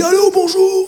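mock big gruff voice, pitched way up, with a laugh.

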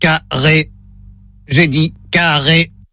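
low, mechanical robot voice. Running a word-repeat test, giving the word to repeat in a robot voice. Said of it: "Voix de robot enclenchée".

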